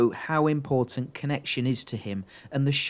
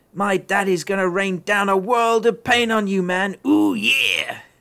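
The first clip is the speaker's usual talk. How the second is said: high, loud, belted wrestling-promo rant; 6 semitones higher, 5 dB louder than usual. Reading out a listener's comment as a wrestler rant: Randy Savage impression. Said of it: "me doing my Randy Savage impression".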